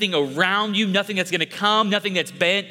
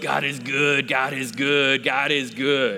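low, slow husky voice, repeated over and over; 6 semitones lower than usual. Speaker recalls how Clarence would pray over and over, imitating Clarence's husky voice. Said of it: "in this husk voice".

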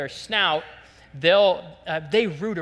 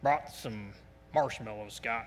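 very low, soft, deep big-guy rumble; 7 semitones lower, 9 dB quieter than usual. Retelling how Kurt Shepler spoke when he came to help, imitating his deep voice. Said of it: "he's got a deep voice".

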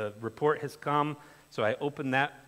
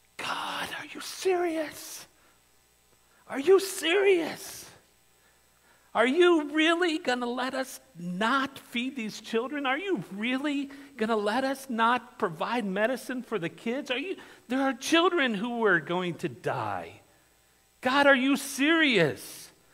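whispered yelling, very high; 11 semitones higher, 4 dB louder than usual. Recounting praying in the shower so the children couldn't hear, retelling yelling in a whisper. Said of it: "I was yelling at God in a whisper".

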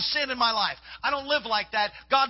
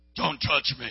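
possessed woman's strange, altered, changed voice; 9 semitones lower than usual. Retelling a prayer session where a voice came out of a woman: imitating a possessed woman's changed voice. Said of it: "this voice came out of her and said".

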